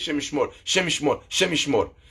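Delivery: half-swallowed mumble. Imitating how their father always said this expression, quick, half-swallowed mumble. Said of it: "very quickly. It would sound a little bit half swallowed".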